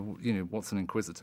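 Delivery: ordinary delivery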